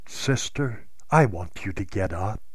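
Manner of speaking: gentle, soft, measured and deliberate delivery. Retelling words spoken to Sally while reaching out a hand, soft but deliberate. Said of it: "i say in a soft but deliberate voice".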